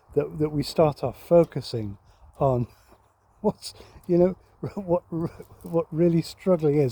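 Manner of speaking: fighting off giggles, stifled laugh held in. Describing years of church meetings, trying not to laugh. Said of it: "I'm trying not to laugh".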